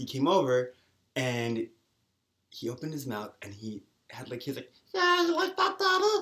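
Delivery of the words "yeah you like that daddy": squeaky, very high puppet voice. Retelling what a guy from the gym said: Muppet voice. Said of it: "he had a Muppet voice".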